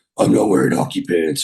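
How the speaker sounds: crazy caped superhero voice. Describing Bale as Batman, imitating Bale's Batman voice. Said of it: "he does that crazy voice".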